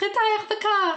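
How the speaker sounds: put-on very high-pitched, frantic, blurted French accent. Retelling Nick's team radio after his crash, imitating a frantic French voice. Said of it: "a frantic French voice goes".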